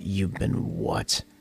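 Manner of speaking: scary, terrifying, dread-inducing voice. Retelling how a friend's mom questioned her son, in a mock-terrifying voice. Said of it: "in this voice that was just terrifying".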